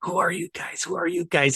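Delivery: under-the-breath whisper, to himself. Retelling watching from a car's back window, whispering to himself. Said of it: "I'm whispering to myself".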